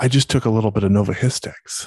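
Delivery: put-on whispering. Retelling what a grandpa whispered in his ear: imitating someone whispering. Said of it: "he whispers in my ear".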